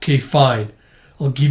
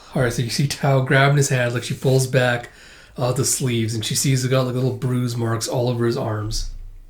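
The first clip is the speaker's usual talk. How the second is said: ordinary talk, nothing marked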